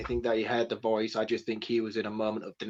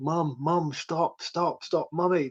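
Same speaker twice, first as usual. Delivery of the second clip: put-on crying, much higher pitch; 6 semitones higher than usual. Praising an actor's scene and quoting him: imitating Alex Wolff crying. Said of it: "He's crying".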